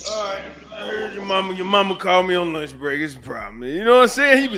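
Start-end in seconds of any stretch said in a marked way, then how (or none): 0.0-3.6 unbothered, words stretched out through a yawn. Imitating a dad who comes in after a call: imitating a yawning dad. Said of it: "he just come in there and yawn".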